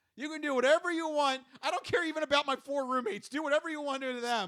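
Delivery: put-on begging tone. Imitating a woman on her knees begging officers: mock pleading. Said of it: "literally begging and pleading".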